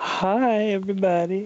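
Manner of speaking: deliberately creepy put-on voice. Practicing a creepy voice, the speaker greets everybody in a creepy voice. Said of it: "That was really creepy".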